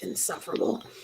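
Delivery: muttering in a different voice. A character leading the way mutters an aside under her breath. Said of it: "mutter under her breath in sort of a different voice".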